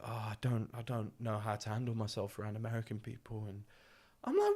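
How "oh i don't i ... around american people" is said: put-on nervous fretting, quieter. Telling about a man nervous at the Inokashira picnic, imitating nervous worry. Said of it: "he was dead nervous".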